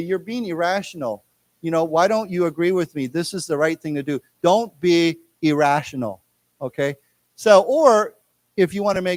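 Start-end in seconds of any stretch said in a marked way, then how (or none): none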